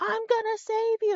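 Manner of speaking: play-acted very high-pitched, distant-sounding yell. Retelling a rescuer calling from the deck: retelling a yell. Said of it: "yelling at us saying".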